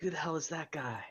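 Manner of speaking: high-pitched, loud stage whisper. Speaking in character so nearby goblins overhear: loud stage whisper. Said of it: "I'm gonna sorta pretend to whisper, but do it loud enough".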